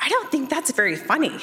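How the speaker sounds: put-on sincere, concerned child voice. A parent retells her four-year-old's reply after running out of gas, imitating a sincere, concerned child. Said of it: "in the most sincere, concerned voice".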